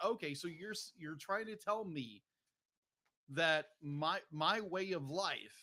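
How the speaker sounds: ordinary delivery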